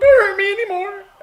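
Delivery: fake pitiful pleading, high and loud.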